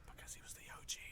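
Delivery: hushed voice. Answering why he prefers Megatron, whispering. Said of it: "Why are you whispering?".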